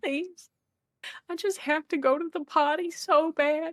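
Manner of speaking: fake-sobbing, high, tearful crying voice. Retelling begging to use the bathroom at a secure facility, mock crying plea. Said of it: "And I'm crying".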